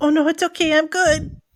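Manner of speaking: tiny, small, high-pitched little voice. Narrator voicing a character calling after the departing listener: Jacques' tiny voice. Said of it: "Jacques' tiny voice".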